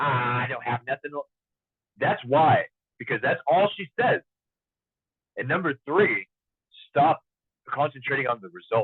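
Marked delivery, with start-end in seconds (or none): 0.0-1.2 gloomy, upset, complaining voice. Retelling what an upset Betty says when she comes in: imitating Betty, upset and complaining. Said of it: "she's upset".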